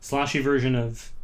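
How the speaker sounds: usual speaking voice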